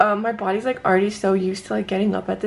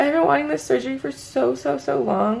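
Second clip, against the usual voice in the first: on the verge of crying, choked up; 4 semitones higher than usual. Thanking the people she's addressing, choking up, near tears. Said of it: "I'm gonna start crying".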